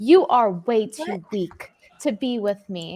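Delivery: dramatic, theatrical reading aloud. Reading out a chat message after being asked: dramatic reading. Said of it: "let's do a dramatic reading".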